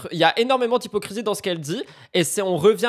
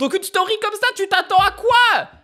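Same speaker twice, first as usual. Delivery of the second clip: shrill, high-pitched yelled shout; 13 semitones higher than usual. Reacting to a story posted online, shouting. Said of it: "Pardon, je crie".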